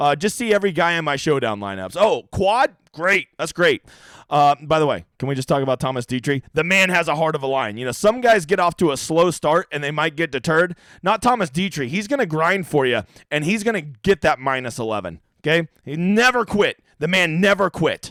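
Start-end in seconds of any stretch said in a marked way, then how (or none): none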